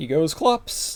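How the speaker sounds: cracking, breaking voice. Recapping a game move by move, with a voice crack. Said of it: "Voice crack".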